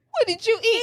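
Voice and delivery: put-on very high voice, broken by giggles. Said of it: "he's clearly laughing".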